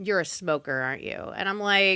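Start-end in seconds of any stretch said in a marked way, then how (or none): 0.0-1.1 imitated disgusted tone, lower. Retelling what a dentist said on seeing the teeth: imitating a disgusted dentist. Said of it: "he just looks disgusted at me".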